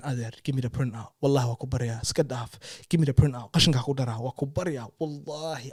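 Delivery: play-acted urgent, imploring, repeated begging tone. Retelling pleading with a driver for the printout: retelling own pleading. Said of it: "I'm pleading with him".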